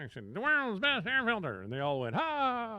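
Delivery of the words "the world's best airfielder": high-pitched put-on squirrel character voice. Voice-over performer recalling offering a squirrel voice for a commercial: squirrel voice. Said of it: "I can do a squirrel".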